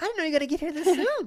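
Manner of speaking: mock high-pitched voice. Imitating how a streamer talks to his wife: imitating a high voice. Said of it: "he does that high voice that's".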